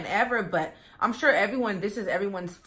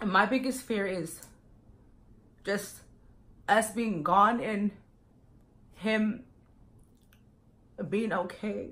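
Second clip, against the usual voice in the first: emotional, halting voice breaking mid-phrase. Speaker shares their biggest fear with the group, getting emotional. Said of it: "I did not expect to get this emotional".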